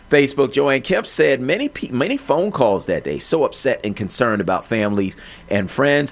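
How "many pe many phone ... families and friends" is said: ordinary talk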